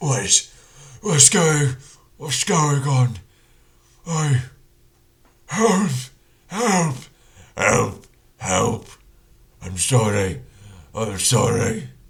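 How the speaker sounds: very loud, high, broken-English troll voice. Working out a voice for a troll-like figure from its picture: troll voice. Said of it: "definitely more of a troll like figure".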